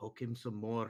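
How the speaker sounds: soft half-whispered aside, close in. Acting out a character telling a little girl to keep poking: half-whispering in character. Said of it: "And I whisper to her".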